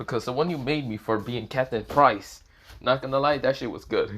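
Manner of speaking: ordinary talk, nothing marked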